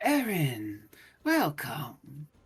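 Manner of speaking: cold, small, icy, swooping voice. Speaking to a player surrounded by darkness, voice the Young Lord's greeting: cold, small voice. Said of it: "cold, small voice of the Young Lord as you hear him go".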